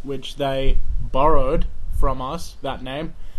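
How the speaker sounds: sarcastic.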